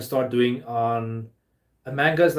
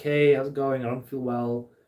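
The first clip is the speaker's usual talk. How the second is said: put-on soft, gentle voice. Imitating the girlfriend's soft personality, a put-on soft gentle voice. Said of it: "Very soft personality".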